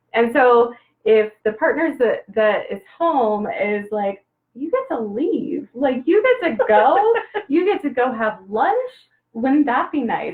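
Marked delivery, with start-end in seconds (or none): 4.5-10.3 needling, swooping sarcastic tone. Acting out a partner at home speaking to the one leaving: imitating a sarcastic partner. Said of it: "there's usually a little sarcasm".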